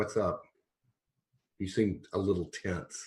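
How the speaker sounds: close, low-voiced delivery. Walking up close to a tense companion: low voice. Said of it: "in a low voice".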